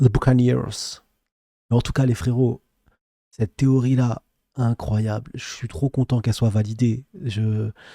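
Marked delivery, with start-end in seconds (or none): 0.0-1.0 English-accented pronunciation. Saying a name left untranslated in English, in an English accent. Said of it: "avec notre accent anglais incroyable".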